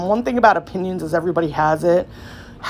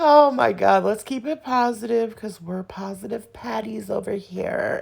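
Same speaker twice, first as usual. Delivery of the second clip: creaky put-on celebrity voice, pushed into low fry; 3 semitones higher, 4 dB quieter than usual. Telling viewers to keep it positive: Kardashian voice. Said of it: "in my Kardashian voice".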